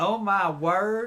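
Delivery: put-on loud proper Southern lady accent. Showing how Southern women say it: imitating a Southern woman. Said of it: "I did it perfect last night".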